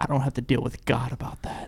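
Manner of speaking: hushed whisper. Bringing up God mid-conversation, whispering. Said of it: "Why are you whispering?".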